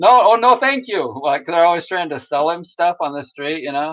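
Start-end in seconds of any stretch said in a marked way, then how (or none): 0.0-1.2 stilted, pitched-up robot voice in broken English. Doing someone's robot voice, turning down street sellers, broken-english robot voice. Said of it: "always like the same kind of a, an accent".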